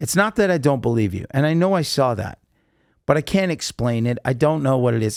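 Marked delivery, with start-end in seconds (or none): none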